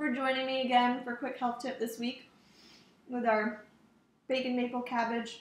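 speaking through a mouthful. Host thanking viewers for joining the weekly health tip, talking with mouth full. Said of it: "I've got a mouthful".

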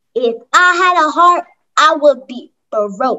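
teasing, mocking mean old man voice. A girl mocks her uncle after he orders the kids back to work, mocking Uncle Rock impression. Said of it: "Are you mocking your great Uncle Rock?".

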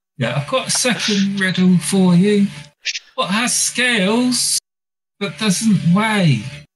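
voice from the stomach. In the game, a voice from a player's stomach poses a riddle; stomach spirit voice. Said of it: "and you hear a sound coming from your stomach, [name]. Yeah. Would you like me to grant you three wishes?".

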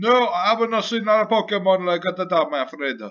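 really bad fake Italian accent, very high-pitched. Playing a role and answering another character, in a really bad Italian accent. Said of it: "I think this is a really bad Italian accent".

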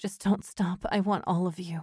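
groaning. A woman speaks to the man touching her, groaning. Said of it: "she groaned".

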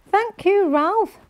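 very high, gleeful, delighted voice. Reading Henry's line as Ralph hands him a present, beaming. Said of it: "beamed Henry".

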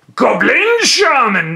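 squeaky, very high, loud put-on goblin voice. Opening a card pack and announcing a card, in goblin voice. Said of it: "I have to use the goblin voice".

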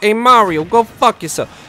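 put-on high, loud, belted New York accent. Recommending a Game Grumps bit, quoting their Baby Bowser; Baby Bowser New York voice. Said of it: "doing a Baby Bowser voice".

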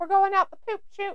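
mocking, high-pitched put-on voice.

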